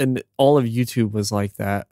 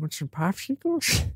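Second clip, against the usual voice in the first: put-on creepy old man voice, higher and quieter; 8 semitones higher, 5 dB quieter than usual. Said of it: "You sound like the Family Guy".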